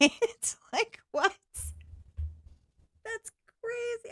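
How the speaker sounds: words breaking into laughter. Reacting to a joke they just retold, laughing while talking. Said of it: "I'm sorry I'm laughing".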